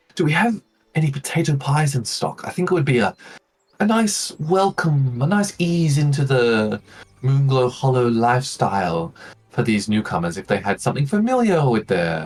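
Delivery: half-whispering. A character sort of whispers to an elf. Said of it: "she sort of whispers to this uh, elf".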